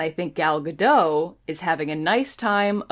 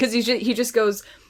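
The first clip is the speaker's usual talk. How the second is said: ordinary talk, nothing marked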